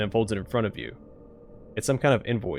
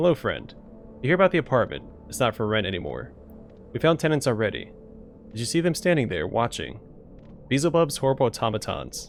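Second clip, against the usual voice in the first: plain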